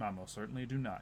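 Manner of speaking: hushed, soft tone. In a game scene, a character answers a question; hushed tone. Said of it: "He says in like a hushed tone".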